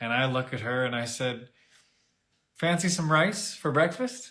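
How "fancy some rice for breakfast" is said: acted, playful, sly, cheeky teasing. Retelling a teasing question to the wife about the rice: imitating a smirking tease. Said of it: "with a smirk on my face".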